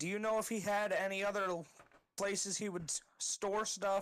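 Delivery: plain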